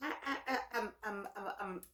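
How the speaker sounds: soft stammer, stuck on the first word. Thrown by something they heard, the speaker starts stuttering. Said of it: "I'm stuttering".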